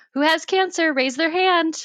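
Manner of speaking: put-on small child's high, blurted shout. Retelling a shout from a silent, awkward room at five years old: imitating own childhood shout. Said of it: "little five-year-old me just shouts".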